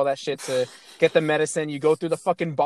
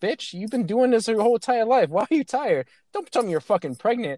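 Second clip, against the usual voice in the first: play-acted, playful, joking teasing tone, pitched up; 6 semitones higher than usual. Retelling what they jokingly said to a character who seemed tired, retelling a joking tease. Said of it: "And I said it jokingly".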